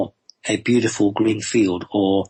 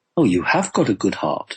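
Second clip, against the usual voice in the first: put-on surprised voice. Retelling what a healer said while checking his heart, imitating a surprised voice. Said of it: "he said in a quite surprised voice".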